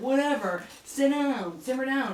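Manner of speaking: loud, high, mock dismissive brush-off. Retelling a movie scene where the cop mocks a prisoner: imitating a mocking cop. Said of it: "everyone's mocking him".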